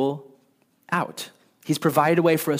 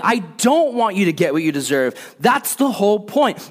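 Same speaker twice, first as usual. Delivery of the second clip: loud, raised, pitched-up shout; 5 semitones higher, 5 dB louder than usual. Acting out God's words to people who sin, imitating God shouting. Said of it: "He's shouting".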